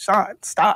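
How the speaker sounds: put-on begging, pleading tone. Retelling being shot and on the floor, begging. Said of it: "begging him".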